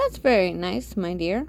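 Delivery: ordinary delivery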